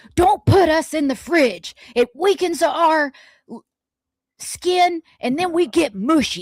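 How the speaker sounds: high, angry talking-food character voice. Speaking as a food, in an angry food voice. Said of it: "I'm saying it like that again to emphasize that they're mad".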